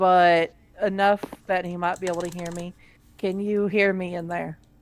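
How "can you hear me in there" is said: gentle, soft, just-audible voice. A player's character calls to a terrified man inside a pod, speaking softly. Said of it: "I will speak softly".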